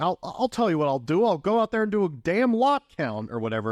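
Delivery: put-on, high, worked-up indignant outburst. Recapping a scene, the speaker acts out Jerry's reply: mock-indignant Jerry. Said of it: "and then Jerry gets all indignant".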